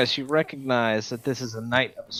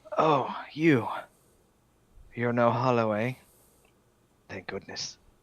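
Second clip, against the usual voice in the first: raspy voice, rasped out between wheezes. Narrating a scene, the speaker voices a weak figure greeting the players: raspy wheezing voice. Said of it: "he breathes in a raspy one, and he says".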